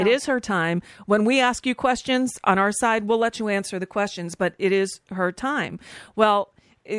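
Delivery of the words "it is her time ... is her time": plain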